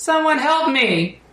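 put-on very high little-girl yell. Game master voicing a cry from the graveyard, little girl yelling. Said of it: "it sounds like a little girl yelling out".

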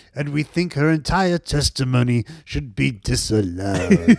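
put-on slow old British actor voice, each word drawn out. Doing an impression of the old British actor in a commercial: James Mason impression. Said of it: "that's my James Mason impression".

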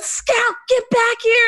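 very high, shrill screaming. Retelling how the speaker's dad yelled after the runaway dog, retelling a scream. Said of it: "my dad's just screaming".

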